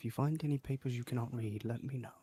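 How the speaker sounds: secretive, hushed, close, private half-whisper. Speaking to the group as a character, half-whispering. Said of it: "he whispers to them like".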